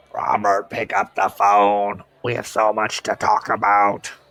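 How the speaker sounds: loud, exaggerated, gurgling growl. Narrator reads the caller's words to Robert, gurgling and growling in Raspy's voice. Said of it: "gurgled and growled in a grotesque exa- exaggeration of Raspy's voice".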